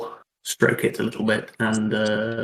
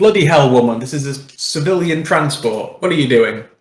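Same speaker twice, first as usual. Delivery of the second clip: loud, shouted in-character yelling outburst; 4 semitones higher, 8 dB louder than usual. Tabletop player voices their character's outburst, yelling. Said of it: "I'm gonna yell".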